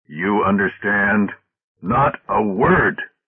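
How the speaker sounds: threatening, dark, deep, slow menacing voice. Speaking to Oldbury, his voice suddenly deepens with menace. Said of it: "His voice suddenly deepened with menace".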